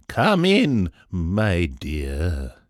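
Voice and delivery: loud, sweet, sing-song calling out. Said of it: "spoke in his friendly, sweet voice".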